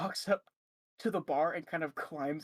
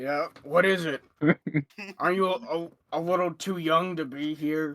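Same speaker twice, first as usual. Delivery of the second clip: annoyed dwarf voice, much louder; 8 dB louder than usual. Voicing a dwarf barman greeted by a young traveler, annoyed dwarf barman. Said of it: "very uh annoyed looking dwarf".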